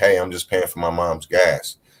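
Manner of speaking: ordinary delivery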